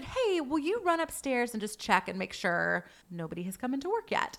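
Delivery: ordinary talk, nothing marked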